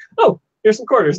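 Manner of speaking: nonchalant, offhand delivery, slightly high-pitched, tossed off. Retelling a movie scene where coins appear: nonchalant Scott Pilgrim impression. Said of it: "just nonchalant".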